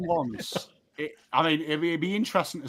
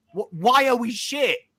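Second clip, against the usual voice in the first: acted furious yell, higher pitch; 8 semitones higher, 3 dB louder than usual. Acting out flipping the boardroom desk: imagined screaming in the boardroom. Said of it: "I would be screaming".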